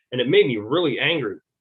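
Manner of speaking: plain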